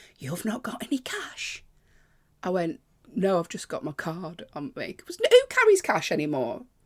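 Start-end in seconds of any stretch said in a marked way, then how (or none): 0.2-1.7 mock proper, intense, pitched-up delivery. Retelling how a man asking for train money pressed him again, retelling an intense question. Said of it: "proper intense".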